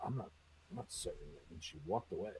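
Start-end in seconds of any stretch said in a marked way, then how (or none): 0.0-1.4 mumbled whisper under the breath. Retelling what a waitress said to herself: imitating someone mumbling. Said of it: "she mumbles to herself".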